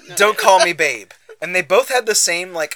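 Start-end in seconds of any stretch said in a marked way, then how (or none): 0.2-1.1 stoic, emotionless, neutral delivery with raised voice. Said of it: "stoic, emotionless".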